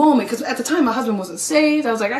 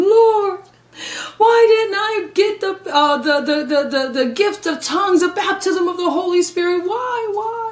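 put-on sobbing cry, much higher and slower; 7 semitones higher than usual. Speaker tells the audience how they pleaded with the lord driving home, retelling crying out to god. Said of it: "I'm crying out to the Lord as I'm driving home".

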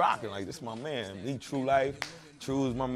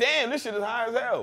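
high, loud, outraged complaining tone. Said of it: "we just sit there and go".

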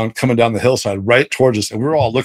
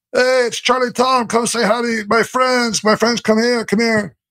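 put-on very high hollering, carrying across distance; 12 semitones higher than usual. Retelling how a man called animals through cupped hands: imitating a cupped-hands call. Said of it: "puts his hands to his mouth and cups his hands".

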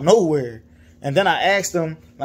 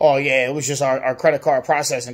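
mock smug, cocky, full-of-himself voice; 3 semitones lower than usual. Retelling what a dealership worker said about the refund: imitating a cocky tone. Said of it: "He started getting all cocky".

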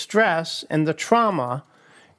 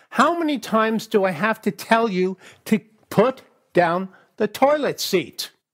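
put-on angry tone, higher pitch; 4 semitones higher than usual. Acting out an angry complaint about the toilet seat being left up: imitating an angry wife. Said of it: "she comes at me and she's pretty angry".

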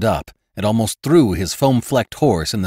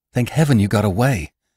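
ordinary delivery

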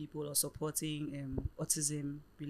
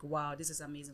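ordinary delivery

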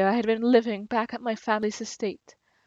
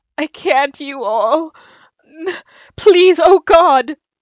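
crying, much louder and higher; 6 semitones higher, 11 dB louder than usual. Threatened with death by a man with a sword, crying. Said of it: "Stop crying".

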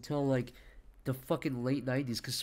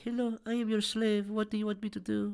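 put-on high twelve-year-old boy's voice; 7 semitones higher than usual. Retelling a game character who ran up to the speaker, in a young boy's voice. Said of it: "It was like a 12-year-old boy".

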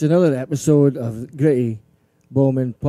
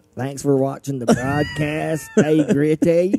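put-on American accent with a swooping tune; 2 semitones higher than usual. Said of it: "doing that American".

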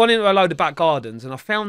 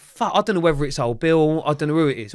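usual speaking voice

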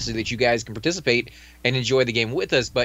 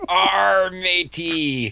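pirate voice, higher; 6 semitones higher than usual. Giving a game character a beard to look like a pirate: pirate voice. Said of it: "We're gonna make it like a pirate".

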